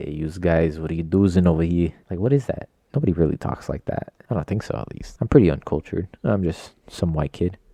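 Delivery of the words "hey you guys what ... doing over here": loose, vague New England Italian gangster accent. Speaker shows the weird voice he slips into, in a vaguely italian gangster voice. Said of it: "a voice that's just like vaguely Italian, New England gangster kind of".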